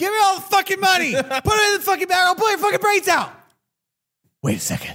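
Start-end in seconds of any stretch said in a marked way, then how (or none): 0.0-3.3 play-acted screaming, very high, shrill and rushed. Acting out the robber demanding the money: imitating the robber screaming. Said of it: "was he just screaming".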